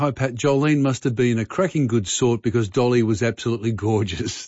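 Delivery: ordinary talk, nothing marked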